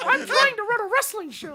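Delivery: very high, loud cartoon voice. Retelling own wrestling promo to a kid: Mickey Mouse voice. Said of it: "doing Mickey Mouse voice".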